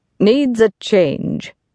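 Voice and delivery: curt, short, clipped delivery. Told that the girl seems dispirited, a man answers: shortly. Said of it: "said Mr. Graham shortly".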